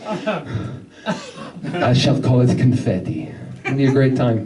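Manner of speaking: low vampire voice with Italian accent flavour. Voicing an italian naming the new thing, vampire-like voice. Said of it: "I don't know why I sound like a vampire".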